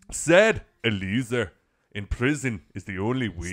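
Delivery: put-on Irish accent. Reading out a comment for laughs: put-on irish accent. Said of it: "Now you're in Ireland".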